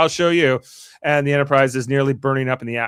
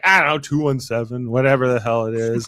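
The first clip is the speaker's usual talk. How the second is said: put-on bored voice. Retelling a scene where Q answers a status request: imitating bored Q. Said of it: "He's so bored throughout the whole".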